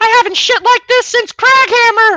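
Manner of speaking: very high, loud put-on gnome shout. A player's character runs past prisoner 13's cell, shouting in a Mickey Mouse gnome voice. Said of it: "shout in my best Mickey Mouse gnome voice".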